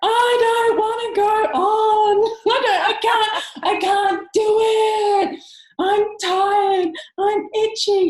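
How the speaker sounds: very high, very loud, very slow shrill sobbing. Recounting a four-year-old niece's first hike up a mountain, imitating a crying child. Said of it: "She's crying".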